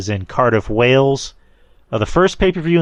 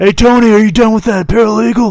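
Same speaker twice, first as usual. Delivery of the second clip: throat-straining put-on voice, higher and louder; 10 semitones higher, 7 dB louder than usual. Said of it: "That hurts trying to do that voice".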